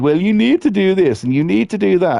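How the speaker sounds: snide and bossy. Complaining about mental health counsellors: imitating a sarcastic counsellor. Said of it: "sarcastic ones who are sort of like".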